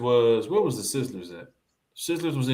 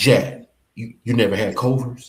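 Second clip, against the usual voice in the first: put-on voice, said louder; 2 semitones lower, 4 dB louder than usual. Retelling a friend's surprised question, imitating Country's way of talking. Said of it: "you know how Country talk".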